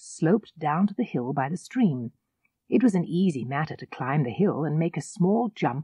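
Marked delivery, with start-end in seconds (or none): none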